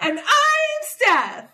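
exaggerated happy squeal, very high, loud and slow.

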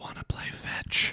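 creepy, breathy whisper, barely audible. Telling a spooky story about a dog at night: put-on eerie whisper. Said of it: "just the whispered voice say".

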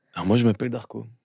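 smooth, suave, seductive microphone voice. Introducing himself in front of the mic to listeners, suave voice. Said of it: "je prends une voix suave".

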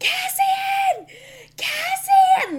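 loud guttural screaming.

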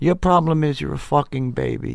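blunt, straight-talking, scolding tone. Retelling what his shrink would say: imitating Phil Stutz. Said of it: "That's what he sounds like".

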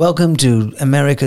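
machine-like assistant voice. Retelling what a talking machine said, Siri-like computer voice. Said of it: "they both sound like Siri".

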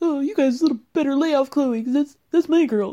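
put-on thick Canadian accent. Retelling what a player said to the others: imitating Tristan Thompson's heavy Canadian accent. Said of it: "with his, like, heavily Canadian accent".

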